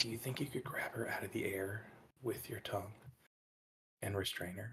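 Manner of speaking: very quiet, hushed, barely audible half-whisper. Playing a character, secretly asking a companion on the shoulder: half-whispering in character. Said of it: "just kinda whisper".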